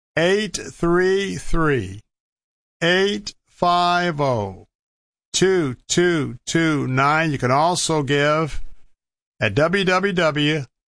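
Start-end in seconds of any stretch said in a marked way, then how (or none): 0.2-7.4 slowly spoken. Radio host repeating a donation phone number for listeners, said slowly. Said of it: "I'll say it slowly".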